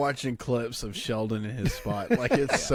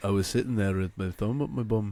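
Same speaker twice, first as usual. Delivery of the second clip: put-on Liverpool-style accent; 2 semitones lower than usual. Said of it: "Just started talking like this".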